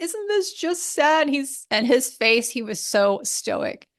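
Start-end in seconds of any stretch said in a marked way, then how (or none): 0.0-1.3 tearful crying voice, pitched up. Retelling a question asked during the last sunset on the boat: imitating own past crying. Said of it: "And I'm just crying".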